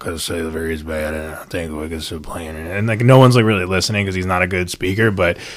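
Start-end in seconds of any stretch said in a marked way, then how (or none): 0.0-2.8 flat droning monotone, very quiet and low. Retelling history, imitating a man giving speeches around New England, in a monotone voice. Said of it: "this really monotone voice".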